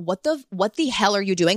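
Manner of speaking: ordinary talk, nothing marked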